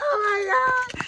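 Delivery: very high put-on girly voice, long drawn-out oh.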